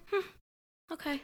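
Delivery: play-acted, lightly dismissive, unbothered, very high voice. Retelling how she reacts to the insult: imitating a character taking it too well. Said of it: "She takes it too well".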